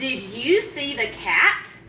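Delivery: slow delivery, rising in pitch at the end.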